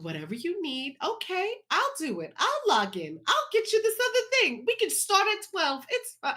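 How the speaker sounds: reassuring, high, swooping sing-song therapist voice. Retelling how she answered the speaker's complaints, imitating her therapist voice. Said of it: "She had her therapist voice on".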